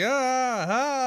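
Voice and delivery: mock yell, high-pitched and loud.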